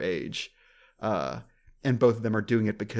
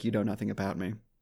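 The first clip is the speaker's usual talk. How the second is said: merciless, dead flat, one-note monotone; 4 dB quieter than usual. Act out someone's reply that completely shuts the talk down, completely monotone. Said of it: "It's completely monotone".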